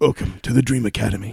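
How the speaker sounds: put-on fast, creaky martial arts master voice. Welcoming everyone to the Dream Academy, in a Sensei voice. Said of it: "This is my Sensei voice".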